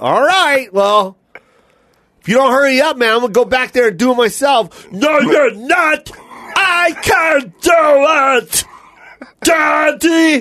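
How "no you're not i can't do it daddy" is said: stretched long, kept high in pitch. A parent retelling their son's words in a Cookie Monster voice. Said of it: "sounded like the Cookie Monster when he talked to me".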